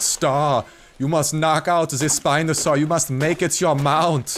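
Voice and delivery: loud, high-pitched bad German accent. Imagining a sign from the gods addressed to Star, God in bad German accent. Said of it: "God now has a shitty German accent".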